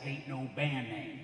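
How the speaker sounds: put-on quiet baritone voice in a Bronx accent. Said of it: "in his baritone Bronx accent".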